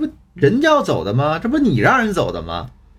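blunt, merciless scolding. Retelling one's own reply to the crying student: imitating a harsh scolding. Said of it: "毫不留情的批评他".

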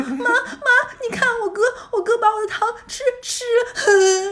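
play-acted very high, loud child's near-sob wail. Retelling what the speaker said to their mother as a small child, imitating a child about to sob. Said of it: "我就快开始狂哭".

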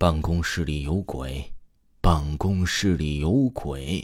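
very deep, heavy voice, intoning word by word. Quoting what a man told the speaker about the office, imitating a very low voice. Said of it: "用很低沉的声音跟我说".

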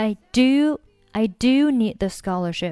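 do hit hard with emphatic stress. Teaching English sentence stress, strong stress on do. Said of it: "这句话当中的do 我们一定要重读。".

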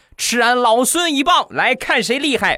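mock, very high, loud, bellowed war cry. Retelling a childhood stick fight, imitating his own loud shout. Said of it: "我大喝一声".

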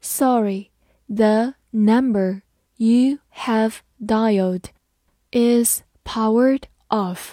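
slow, deliberate reading.

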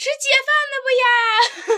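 very high, very slow, loud, drawn-out shout. Retelling how the food delivery woman called out at the door: imitating someone shouting. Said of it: "那个送饭的女的喊说".

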